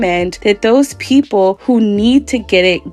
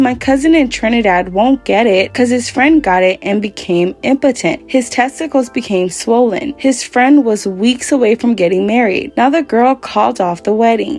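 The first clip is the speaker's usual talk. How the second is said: usual speaking voice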